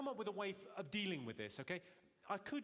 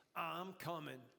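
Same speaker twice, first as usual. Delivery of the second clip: put-on 1970s-style New York voice. Speaker demonstrating the voice they'd use during sex: 1970s blaxploitation New York voice. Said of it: "nineteen seventies blaxploitation New York City voice".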